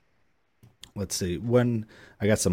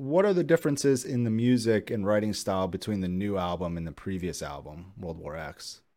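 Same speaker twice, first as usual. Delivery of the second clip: ordinary delivery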